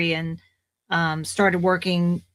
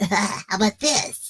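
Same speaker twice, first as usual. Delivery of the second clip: put-on raspy boy voice; 2 semitones higher than usual. Retelling an audition where judges asked for more raspiness: raspy young boy voice. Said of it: "asked me to be a little more raspy with the voice".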